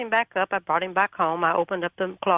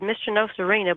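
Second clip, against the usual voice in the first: ordinary talk, nothing marked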